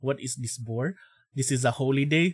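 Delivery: heavy, thick put-on Filipino accent, low-pitched. Opening a stream, the streamer slips into a bit: thick Filipino accent. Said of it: "Thick Filipino accent".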